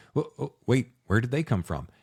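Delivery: ordinary delivery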